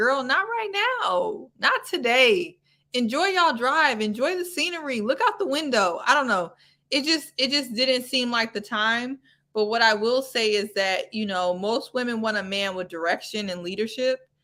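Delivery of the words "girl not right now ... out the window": mock high-pitched screaming and yelling. Retelling a reaction while watching a show: retelling screaming at the tv. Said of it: "I started screaming at the, at the T V".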